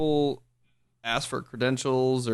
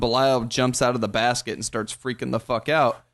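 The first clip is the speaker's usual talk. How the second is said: plain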